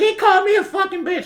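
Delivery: put-on, very high, shrill yelling. Retelling what a lady yelled at a comedian: imitating someone yelling. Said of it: "yelling at him".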